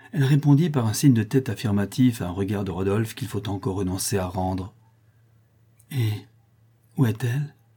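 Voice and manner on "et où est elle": voice trembling like a leaf, quavering. Narrator reads a prince asking where she is: trembling like a leaf. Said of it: "dit le prince en tremblant comme la feuille".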